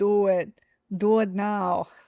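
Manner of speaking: loud, very slow, barking tough-guy voice. Telling listeners to put on headphones: Arnold Schwarzenegger voice. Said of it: "I say it like Arnold".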